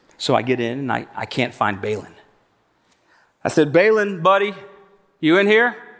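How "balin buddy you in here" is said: mock sugary, high, sweet, coaxing calling voice. Searching for Balin, calling him in a faked sweet voice to trick him out. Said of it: "tried to say it real sweet".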